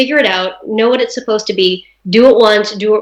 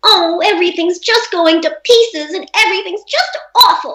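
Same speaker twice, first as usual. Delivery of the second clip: put-on forties-movie style high, pouty little-girl voice; 9 semitones higher than usual. Showing the stylized forties little-girl voice for an audition: pouty 1940s little-girl voice. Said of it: "That kind of just really pouty".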